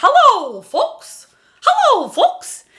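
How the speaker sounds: very high-pitched voice filling the head. Showing a voice exercise: Mickey Mouse voice. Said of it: "So try that".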